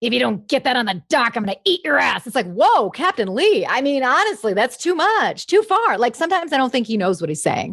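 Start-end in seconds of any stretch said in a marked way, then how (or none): 0.0-2.3 menacing delivery with real grit. Describing how Captain Lee talks, the speaker quotes him: gritty Captain Lee impression. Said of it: "it's real gritty".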